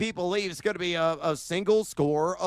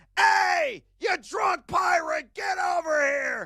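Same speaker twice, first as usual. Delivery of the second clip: fake shouting, higher pitch; 12 semitones higher than usual. Joking about yelling at someone at the bar: mock yelling at someone. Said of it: "I gotta yell at this moron".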